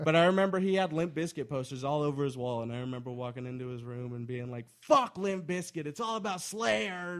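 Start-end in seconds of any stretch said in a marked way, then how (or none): 4.8-7.2 mock child voice, pitched up, berating and taunting. Retelling words said at nine to a best friend: imitating own past berating. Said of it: "just fucking berating my best friend".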